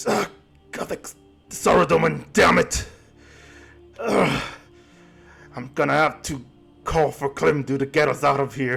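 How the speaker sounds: hushed, confiding stage whisper aside. Voicing a character who half-whispers to a nearby player: half-whispering. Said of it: "whispering to you".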